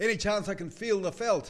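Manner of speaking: loud, high-pitched yell.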